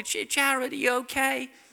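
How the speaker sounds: small, feeble, very high-pitched little voice. Retelling a call from the door at night: imitating Vicky's feeble little voice. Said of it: "Vicky's kind of slightly feeble little voice".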